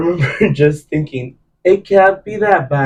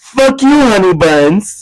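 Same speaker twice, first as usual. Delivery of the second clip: put-on, very loud, high, slow, drawn-out jab; 6 semitones higher, 5 dB louder than usual. Retelling a remark made at the finale, imitating saying it really loudly. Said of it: "So I said really loudly".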